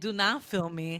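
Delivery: slow, deliberate, drawn-out, spaced-apart delivery. Imagining Angie refusing to be filmed: imitating Angie. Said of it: "Angie would fucking be like".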